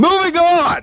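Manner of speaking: abrupt, sudden shrill yell, very high. Switching topics on a sports talk show: yelling. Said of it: "why are you yelling?".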